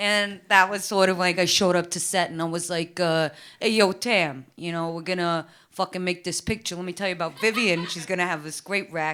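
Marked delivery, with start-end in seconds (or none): 3.6-9.1 put-on really strong, thick New York accent. Retelling what a director said on set, imitating a thick new york accent. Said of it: "He kinda talks like this".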